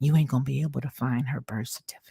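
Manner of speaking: soft, fast, close whisper. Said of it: "bent over real quietly and whispered".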